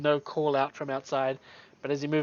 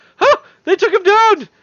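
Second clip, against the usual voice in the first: very loud, shrill, high-pitched yelled shout; 13 dB louder than usual. Voicing unseen foes outside after a fight: shouting. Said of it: "you hear voices from outside shout".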